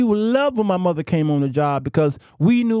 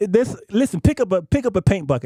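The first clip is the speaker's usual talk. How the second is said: ordinary talk, nothing marked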